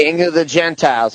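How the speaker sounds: normal talking voice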